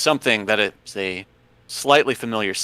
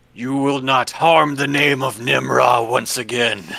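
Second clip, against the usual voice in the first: big, loud, resounding booming voice from beyond; 3 semitones higher, 4 dB louder than usual. A game master voicing a voice from beyond at the party: loud, booming voice. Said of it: "in a loud, booming voice".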